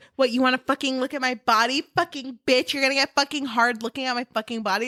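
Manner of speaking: fast, rattled-off, hostile snap. Complaining about a comment two people kept making, mimicking a hostile snap. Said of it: "would make the comment like".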